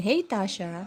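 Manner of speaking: honeyed, sweet, sugary tone. Speaker imitating how Party Music says a line, sweet Party Music voice. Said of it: "Ang sweet ng boses niya ni Party Music. Kaya ang, ang, ang pakasabi niya dyan sa hey Tasha, parang ganun yan".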